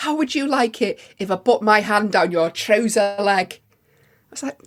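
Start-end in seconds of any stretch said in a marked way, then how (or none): 0.0-3.6 outraged, loud, in-your-face yelling. Retelling an angry stranger confronting a friend: imitating a man shouting. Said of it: "he was really shouting out, he was really in the face".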